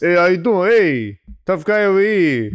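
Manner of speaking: put-on Brooklyn accent. Asked whether they can do a Brooklyn, giving it a try in a Brooklyn accent. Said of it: "Can you do a Brooklyn?".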